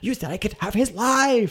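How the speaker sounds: high-pitched, outraged voice, thrown out.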